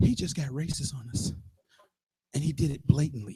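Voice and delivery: low, soft whisper. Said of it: "Why am I whispering?".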